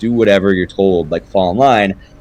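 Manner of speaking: ordinary delivery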